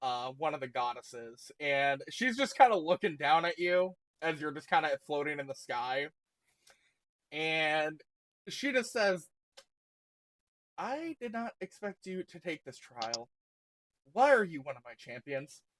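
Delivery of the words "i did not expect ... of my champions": utterly, completely let-down and disappointed tone. As the goddess Fallow, looking down at a floating champion, completely disappointed. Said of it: "in a completely disappointed voice".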